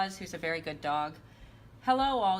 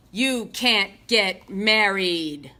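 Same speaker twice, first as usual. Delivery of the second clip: very loud, menacing, scary bellow; 10 dB louder than usual. Narrator reading a story, voicing the stink bug: scary voice. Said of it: "said a scary voice".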